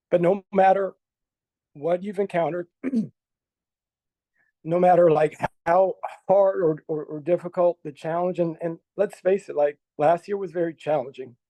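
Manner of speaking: moved, emotional, voice choking up. Praising someone who works at the school, getting choked up. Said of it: "I'm actually kind of getting choked up".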